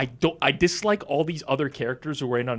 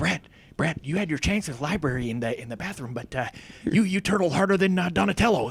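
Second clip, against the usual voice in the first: dopey, dumb-sounding cartoon voice; 3 semitones higher than usual. Imitating how Beak talks to Brett, in a Beavis and Butt-Head-like voice. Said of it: "You sound like Beavis and Butthead".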